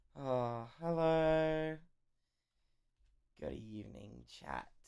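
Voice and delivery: groggy morning voice. Greeting chat late in the day, tired morning voice. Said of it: "Egg's got that tired voice".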